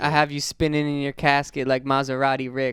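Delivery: ordinary delivery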